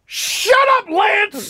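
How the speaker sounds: screaming outburst, shrill and pitched very high. Retelling how a manager answered a reporter's question: imitating someone screaming. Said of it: "He's just screaming at Lance Hornby".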